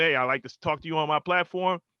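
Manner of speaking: ordinary talk, nothing marked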